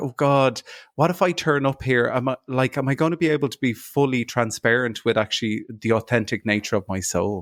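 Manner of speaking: plain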